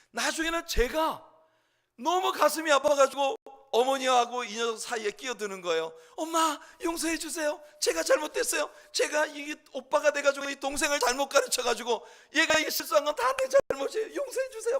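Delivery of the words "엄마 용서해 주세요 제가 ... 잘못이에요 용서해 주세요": mock desperate, high-pitched, clinging pleading tone. Speaker retells begging his mother to forgive his younger brother, acting out pleading. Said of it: "막 이러면서 어머니 회초리 붙들고 막 매달리죠".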